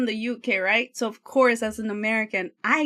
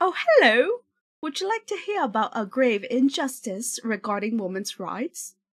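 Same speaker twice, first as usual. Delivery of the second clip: bad, clumsily put-on fake British accent. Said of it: "my British is so bad".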